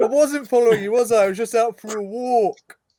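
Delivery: mouth full, very high and loud. Narrator voices a character denying he was following someone, with his mouth full. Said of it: "with his mouth full".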